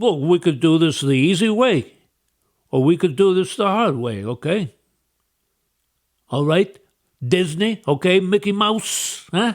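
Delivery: tough-guy mob boss voice. Imitating an official who talks like a mobster: imitating someone talking like a mobster. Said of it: "who's talking like a mobster".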